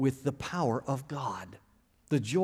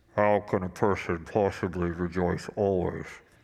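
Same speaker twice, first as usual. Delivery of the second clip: puzzled, pitched very low; 7 semitones lower than usual. A speaker voices the audience's question in a Kylo Ren voice. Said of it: "in your Kylo Ren voice".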